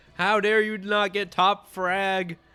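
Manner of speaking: mock furious, loud, shrill screaming. Describing angry Valorant players, imitating people screaming angrily. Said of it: "just screaming at you going".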